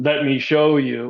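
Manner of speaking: very deep, booming, declaiming voice. Retelling what a beaked being said telepathically: imitating a deep booming voice. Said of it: "it was this deep, deep voice ... just booming".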